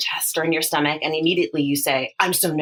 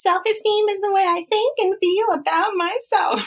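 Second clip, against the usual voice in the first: put-on high-pitched young child voice. Showing listeners how the daughter says it, in a four-year-old voice. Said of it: "in your best four-year-old voice".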